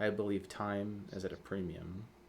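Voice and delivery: hushed, very quiet, soothing, matter-of-fact calm voice. Acting out someone leaning in to another person and speaking, mock-calm, soothing voice. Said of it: "very calm, very like very soothing voice".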